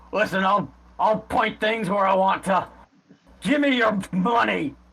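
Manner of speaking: put-on high, slurred speech with words running together. Voicing a character aiming a spear and demanding money: slurred speech. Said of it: "sort of slur".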